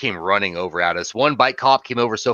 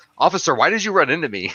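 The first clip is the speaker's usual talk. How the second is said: put-on very calm, polite delivery, higher pitch; 7 semitones higher than usual. Retelling what a cyclist said after a cop hit him: imitating a very calm cyclist. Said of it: "The guy was very calm".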